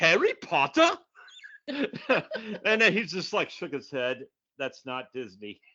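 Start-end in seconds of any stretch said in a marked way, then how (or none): 0.0-0.9 very loud, high, confident put-on British accent. Retelling answering his quiz question with full confidence, in a British accent. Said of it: "in the British accent".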